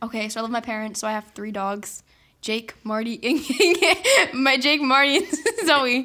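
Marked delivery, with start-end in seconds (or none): 2.4-6.1 very slow, loud, drawn-out, laughing while speaking. Naming the family dogs after forgetting one's name, laughing. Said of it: "Why are you laughing?".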